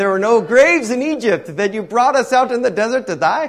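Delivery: put-on Indian accent. Trying out a voice for a quoted scripture line, put-on Indian accent. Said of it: "That was maybe more of an Indian voice".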